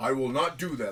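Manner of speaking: deep, low-pitched voice. Retelling what Thor said to Heimdall: imitating Thor's deep voice. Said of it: "with that deep-ass voice".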